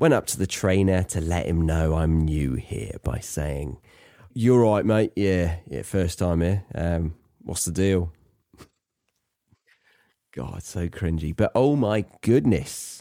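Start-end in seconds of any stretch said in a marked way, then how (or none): 4.3-8.1 put-on casual colloquial accent, dropped h's, swallowed glottal t's. Retelling greeting the trainer on a first visit, in a colloquial accent. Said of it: "adopted a more colloquial accent".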